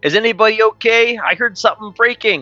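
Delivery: shouted out very high and very loud. Describing their character's plan in the game, the player speaks the character's line, said real loud. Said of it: "And then I'll say real loud".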